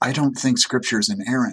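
put-on mock whispering. Imitating churchgoers admitting a doubt: imitating someone whispering. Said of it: "feel like they have to whisper".

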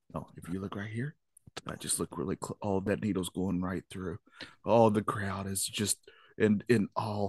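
soft, hushed golf commentator voice. Doing knitting commentary like golf coverage: quiet golf commentator voice. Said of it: "you gotta be quiet".

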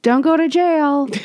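light, called-out voice. Retelling yelling back to a woman in an elevator, retelling a yell. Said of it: "And I yelled back".

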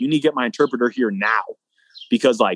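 ordinary talk

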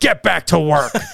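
put-on, half-hearted, lightly spooky voice, called out. Reading a ghost story aloud, voicing the ghost's command: ghost yelling an order. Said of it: "Slag's voice yelling".

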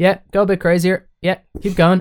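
relaxed, easy coaxing. Retelling how the director gave instructions during a video shoot: imitating a calm director. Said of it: "he'd say it in a very calm manner".

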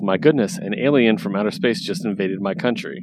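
ordinary delivery

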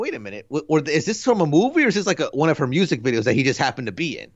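normal talking voice

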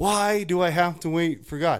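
loud, high, frustrated, exasperated outburst. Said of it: "getting frustrated".

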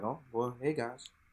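put-on casual villain voice. Retelling comic book Thanos greeting everyone as a farmer: imitating comic book Thanos, acting like nothing happened. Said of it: "Acted like nothing, like nothing happened".

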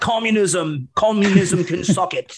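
slow, deliberate, high-pitched, booming declaring voice. Imitating Margaret Thatcher for the others: imitating Margaret Thatcher. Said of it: "when you can do it so well".

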